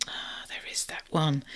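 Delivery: soft, unvoiced whisper to oneself.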